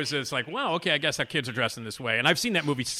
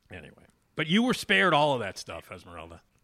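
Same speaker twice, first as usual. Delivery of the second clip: ordinary talk, nothing marked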